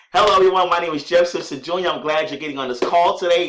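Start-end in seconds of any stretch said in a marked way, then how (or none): 0.1-1.9 energetic, enthusiastic, raised voice with a smile. Demonstrating a call greeting, smiling, enthusiastic voice. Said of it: "if you smile while you're talking, people can hear that energy".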